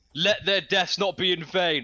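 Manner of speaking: cheesy, screamed battle cry. Warning listeners it will be cheesy, then screaming a rallying cry. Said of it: "I'm gonna scream".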